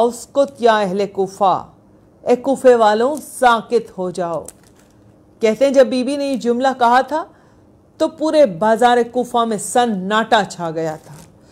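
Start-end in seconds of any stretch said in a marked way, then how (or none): none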